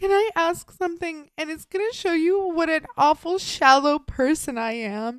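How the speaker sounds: mock-crying while speaking. Retelling a woman's words as she starts crying: imitating someone crying. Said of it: "She starts crying".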